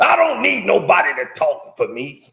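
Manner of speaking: loud host voice ending in laughter. Showing how to do Gil's voice: imitating Gil's voice, laughing at end. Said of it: "All you gotta do is laugh at the end of it".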